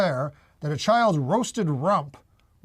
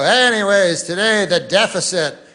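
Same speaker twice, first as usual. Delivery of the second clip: put-on newscaster voice, louder; 7 dB louder than usual. Retelling what the guy on the news says: imitating a news anchor. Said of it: "the guy will come on and he'll go".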